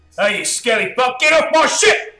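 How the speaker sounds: shouting in character voice. Voicing a character on a ship yelling at a skeleton: yelling in character. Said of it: "he yells out".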